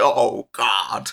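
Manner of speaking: disgusted cry. Retelling a new vampire's line when eating rats in a game: imitating a disgusted new vampire. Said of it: "He hates it".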